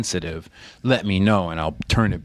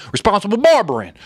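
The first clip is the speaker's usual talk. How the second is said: loud, much higher Southern twang in auctioneer style. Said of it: "in twang, like Southern twang, as an auctioneer voice".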